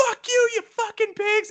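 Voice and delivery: very high shrieked screaming yell. Recounting a movie scene where a woman sees a cop car: retelling a woman's scream. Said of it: "she just screams".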